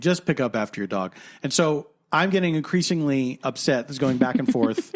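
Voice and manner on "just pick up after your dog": condescending, superior, talking-down tone. Retelling what the other man said during a phone argument, mock-condescending. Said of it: "he's saying condescendingly".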